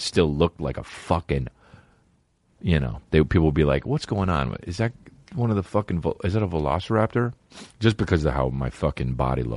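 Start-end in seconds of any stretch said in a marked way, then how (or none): none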